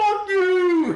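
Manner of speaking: screaming at top volume. Player's character hurls a javelin at a Bullywug, screaming at top of lungs. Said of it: "I'm gonna scream at the top of my lungs".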